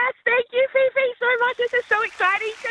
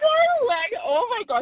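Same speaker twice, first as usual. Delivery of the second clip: very slow, voice trembling toward crying. Hearing on the phone that she got tickets: shaking, about to cry. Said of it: "I'm shaking. I'm about to cry".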